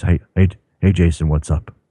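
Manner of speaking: phone voice, very close to the receiver. Imitating a regular caller who phones in very close to the phone: Washington impression. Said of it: "I don't have Washington's voice".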